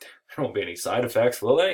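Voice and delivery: sarcastic, swooping sing-song tone. Lecturing about a race between two railroad companies: sarcastic. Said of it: "I'm being sarcastic".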